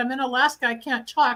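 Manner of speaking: ordinary talk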